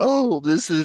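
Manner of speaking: high words broken by bursts of laughter. Reacting to the others' teasing, laughing while talking. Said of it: "I'm laughing so much, I'm sorry".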